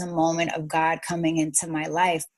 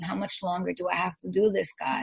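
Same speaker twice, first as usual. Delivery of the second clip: put-on crying, sobbing voice, quieter; 5 dB quieter than usual. Retelling a prayer said crying on the knees: retelling a crying plea. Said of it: "I just got on my knees and I was crying".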